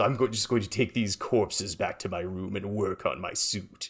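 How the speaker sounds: put-on cartoon character voice. Retelling a line from a scene, done in a Grinch voice. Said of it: "Grant in his Grinch voice goes".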